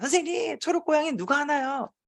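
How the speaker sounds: very high, eager shouting in an uproar. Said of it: "아이들이 난리가 났어요".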